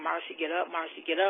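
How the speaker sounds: ordinary delivery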